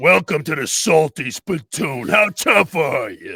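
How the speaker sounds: large tough cartoon character voice. Showing a cartoon voice from animation jobs: SpongeBob big-guy character voice. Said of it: "SpongeBob, what, whatever".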